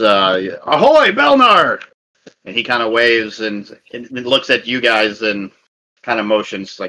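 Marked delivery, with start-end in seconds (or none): 0.0-1.8 guard voice calling out, much higher. Narrator voicing one of the guards as the barge pulls up to the dock, calling out. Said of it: "you hear one of the guards".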